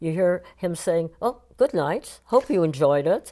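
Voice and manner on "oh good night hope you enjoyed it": dripping, very sarcastic, fake-polite tone. Retelling what a man said as people walked out on him, mimicking sarcasm. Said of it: "very sarcastically".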